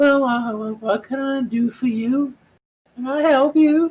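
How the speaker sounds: put-on old person's voice, very high-pitched. Game master voicing someone answering a knock at the door, in an elderly voice. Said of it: "an elderly voice comes in".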